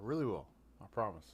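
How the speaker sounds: soft, dismissive, dripping with disrespect. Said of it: "it's like dripping with disrespect".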